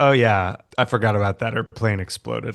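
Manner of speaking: normal talking voice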